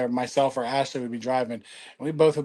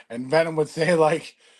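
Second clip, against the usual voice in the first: normal talking voice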